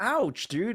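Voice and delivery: very high-pitched yelp of pain. Retelling how a pimple being popped hurt: imitating own yelling.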